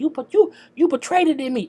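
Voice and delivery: mock very high-pitched, heated yelling. Retelling a salon argument, imitating Sharonda yelling. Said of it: "Sharonda yelling like".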